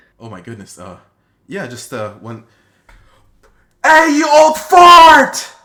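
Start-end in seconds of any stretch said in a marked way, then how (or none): 3.8-5.4 very loud, high, very slow booming bellow. Describing a man shouting into the back, retelling a really loud yell. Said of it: "He like yells that like really loudly".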